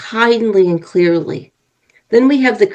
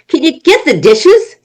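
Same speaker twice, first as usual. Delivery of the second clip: cranky, irritable, crabby voice, pitched up; 7 semitones higher, 4 dB louder than usual. Demonstrating how tone of voice influences a listener: crabby. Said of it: "if I say it in the crabby way".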